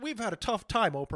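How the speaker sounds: mock sarcastic, self-pitying royal-sounding lament. Mocking rich royals telling Oprah about hard times: mocking royal family members. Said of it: "members of the royal family".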